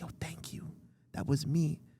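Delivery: slow, hushed whisper, very close to the ear. Retelling a director whispering thanks at a premiere: imitating Ryan Coogler whispering. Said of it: "he whispered in my ear".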